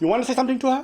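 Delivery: put-on high-pitched Indian English accent. Speaker imitates an Indian guy urging someone to speak to her, Indian English accent. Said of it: "But Indian English".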